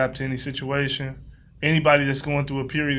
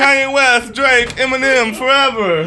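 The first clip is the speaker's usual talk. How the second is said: higher, louder mock announcer voice; 11 semitones higher, 10 dB louder than usual. Mocking another speaker's reading by imitating an award show announcer. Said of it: "He sound like he reading off the winners of the award show".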